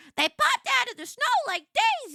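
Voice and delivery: terrible shrill voice, squealing, pitch swooping all over. Describing a rush of customers in food retail, the speaker quotes Mushu in a terrible Mushu impression. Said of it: "that's my terrible Mushu impression".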